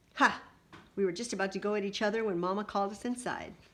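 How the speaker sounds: plain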